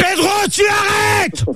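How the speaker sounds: high-pitched, slow, angry, furious shout.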